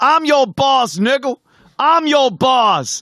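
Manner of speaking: shrill, very high, drawn-out holler. Retelling a man down the line yelling at the cops: imitating someone yelling. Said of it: "he's yelling at the cops".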